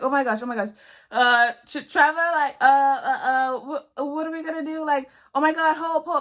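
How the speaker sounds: mock panic, high, loud, flustered stammering. Retelling how a sister reacted on finding the speaker bleeding: imitating a panicked sister. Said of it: "it just sounded like she just did not know what to do".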